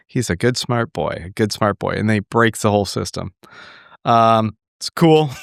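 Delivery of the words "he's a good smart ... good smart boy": put-on whisper, much lower, quieter. Acting out what a character says to himself, retelling a whisper to himself. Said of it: "whispers it to himself".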